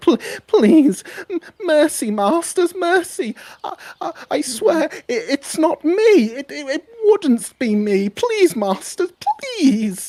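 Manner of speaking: very high, very slow, stammering pleading voice. Voicing a small creature held down by its masters: begging for mercy. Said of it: "you can beg".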